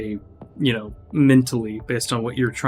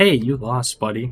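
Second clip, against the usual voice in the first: utterly heartfelt, sincere, earnest, no irony at all. Retelling how the line sounded to another speaker: super sincere. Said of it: "super sincere".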